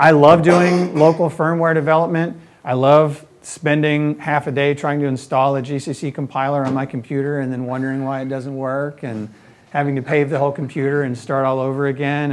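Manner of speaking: ordinary talk, nothing marked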